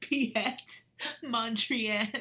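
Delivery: really funny, very loud, high-pitched comic delivery. Leading viewers in saying an artist's name, the speaker says it like it's really funny. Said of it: "Now say it like it's really funny".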